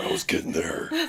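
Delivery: put-on deep voice. Repeating the other speaker's correction back: imitating a low voice. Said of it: "talking to me in that low voice".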